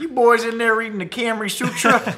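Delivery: very high, loud, put-on Midwestern dad voice. Riffing on a camry sutra pun, doing a midwest dad voice. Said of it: "This sounds like a Midwest dad".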